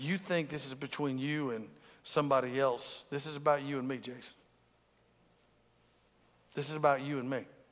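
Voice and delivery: quiet, soft whispering. Retelling words heard lying in bed one night: God whispering. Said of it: "God just kinda whispering".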